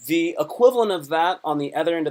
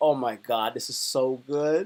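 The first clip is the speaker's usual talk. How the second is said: put-on expressive savoring, lower and quieter; 4 semitones lower, 5 dB quieter than usual. Retelling how he reacted while eating food he liked: retelling own expressive eating reaction. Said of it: "and I would just eat it and be like".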